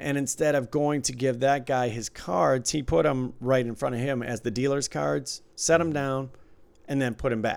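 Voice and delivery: ordinary talk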